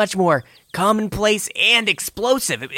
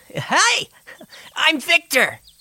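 put-on high, sing-song little tadpole kid voice; 8 semitones higher than usual. Voicing a little blue tadpole kid who runs out: little tadpole kid voice. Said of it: "a little tadpole, runs out and goes".

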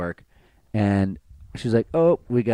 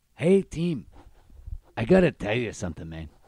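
put-on Mexican accent in English. Retelling a story about a man addressing his team, in a put-on accent. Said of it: "he said in this accent".

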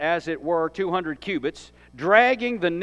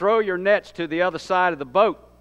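ordinary talk, nothing marked

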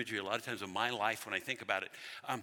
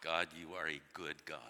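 put-on speech through gritted, clenched teeth; 7 semitones lower, 7 dB quieter than usual. Retelling praying while late for an appointment, through gritted teeth. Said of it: "through gritted teeth".

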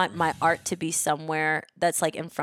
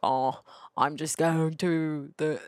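put-on big-mouthed country club voice. Describing a cartoon episode, doing its big-mouthed guys: Family Guy big-mouth guys impression. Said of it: "really bad at the impression".

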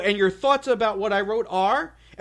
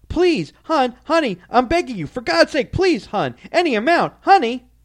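acted, mock-desperate pleading, begging tone; 3 semitones higher, 5 dB louder than usual. Retelling what she said to the speaker, imitating desperate pleading. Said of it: "you can hear the desperation in her voice".

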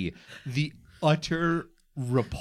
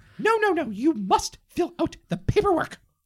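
very high, put-on little chick voice; 13 semitones higher, 4 dB louder than usual. Speaker switches from their own bit to voicing the chick: voice of the chick character. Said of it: "Could you not tell by my voice?".

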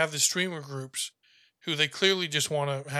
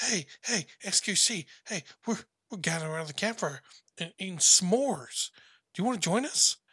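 put-on most innocent childish voice, pitched up; 5 semitones higher than usual. Retelling a story, the speaker quotes someone inviting him to the campfire: innocent childish voice. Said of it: "in like the most innocent childish voice".

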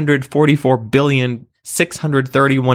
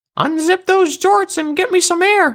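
very high, weak, tiny, frail croaking voice. Reading a story, voicing the tiny voice that talks to the main character: tiny frail croak. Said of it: "the tiny voice croaked, frailer than before".

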